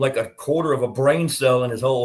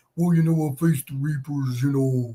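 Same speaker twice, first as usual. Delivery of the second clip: derisive, mocking little Midwest accent. Mocking a rival's future reply in his little stupid midwest accent. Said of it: "in his little stupid Midwest accent".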